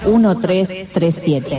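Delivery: put-on lady announcer voice.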